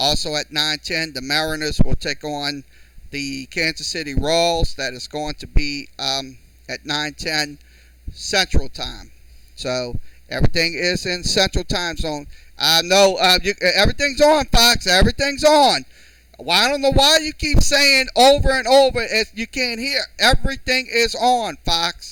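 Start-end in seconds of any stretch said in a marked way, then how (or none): 12.6-20.0 loud, high-pitched raised voice, yelled out. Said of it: "raising my voice at somebody".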